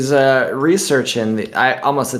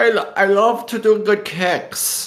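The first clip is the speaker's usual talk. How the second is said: put-on light Dutch accent, pitched up; 9 semitones higher than usual.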